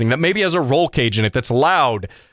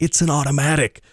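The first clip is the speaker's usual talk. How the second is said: playful mock whisper. Confessing that the car is an automatic: mock whisper. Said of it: "I gotta whisper that".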